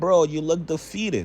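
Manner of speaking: ordinary talk, nothing marked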